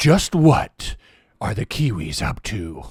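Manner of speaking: deep, booming, dramatic movie-trailer narrator voice. After describing suspense music, the movie trailer voice comes in. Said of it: "the movie trailer voice comes in".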